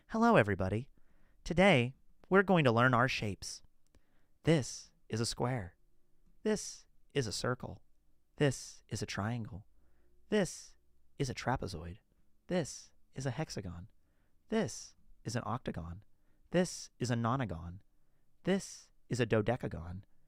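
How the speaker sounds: very quiet, barely audible, hushed speech. Imagining how Makino would talk, as Makino talking very quietly. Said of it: "talking very silently like this".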